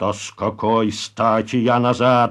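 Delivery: plain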